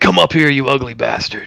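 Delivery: loud, high-pitched, jeering, taunting tone. Playing a character in a game, taunting a creature. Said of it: "trying to like taunt this creature".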